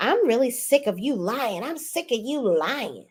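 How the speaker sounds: put-on theatrical, overblown, dramatic tone with swooping pitch. Retelling a reality show quarrel where Ashley accuses Stacy: imitating someone being dramatic. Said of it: "you are being so dramatic right now".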